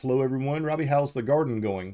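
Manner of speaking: normal talking voice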